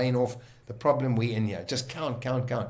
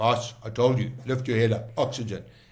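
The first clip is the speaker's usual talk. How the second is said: put-on big, gruff voice. Quoting Bob telling his boss to lift his head, in Bob's big gruff voice. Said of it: "Bob was a big gruff voice".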